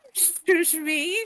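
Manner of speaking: muffled speech. Speaking in character while a hand covers the mouth: muffled, hand over mouth. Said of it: "it's all muffled and stuff 'cause apparently I have a hand over my mouth".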